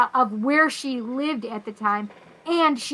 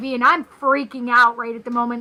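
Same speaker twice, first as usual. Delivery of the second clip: usual speaking voice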